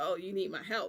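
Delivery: imitated arrogant, condescending tone. Speaker imitates a man asking how he may help, mock-arrogant. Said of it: "In an arrogant way".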